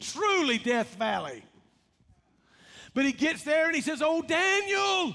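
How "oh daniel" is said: put-on anguished cry, much higher. Retelling what he said on reaching the lions' den, acting out an anguished voice. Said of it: "he says in an anguished voice".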